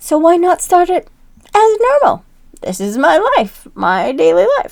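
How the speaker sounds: hoarse, scratchy voice. Talking to viewers while sick for weeks: scratchy voice from being sick. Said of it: "excuse my scratchy voice today".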